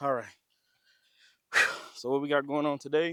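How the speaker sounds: out of breath, winded, breathless. Recording while moving stuff from the entrance, out of breath. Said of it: "I'm out of breath".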